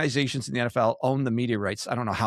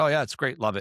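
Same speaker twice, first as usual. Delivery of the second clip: mock dry, sarcastic approving tone. Retelling someone's press-conference remark, mock-sarcastic. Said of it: "being like sarcastic in a press conference".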